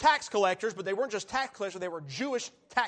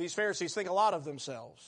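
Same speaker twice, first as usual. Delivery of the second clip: plain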